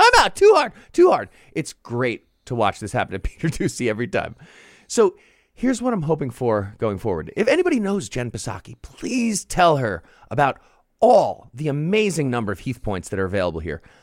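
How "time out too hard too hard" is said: very high, whiny, sobbing crying yell. Acting out a man running away after being punched in the face, imitating someone crying and yelling. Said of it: "he runs away crying and yelling".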